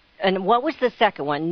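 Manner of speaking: plain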